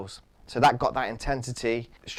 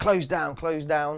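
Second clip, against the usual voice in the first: mock encouraging, urging coaching tone; 4 semitones higher than usual. A coach showing how they encourage the striker in a session, louder encouraging call. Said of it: "just using my voice a little bit louder".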